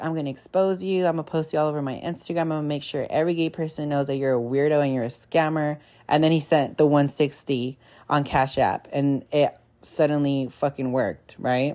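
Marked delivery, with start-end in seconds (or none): none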